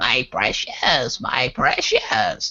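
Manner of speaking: very slow creature voice, every word stretched out. Imagining how a person would sound as Gollum: Gollum voice. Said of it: "Just imagine her going".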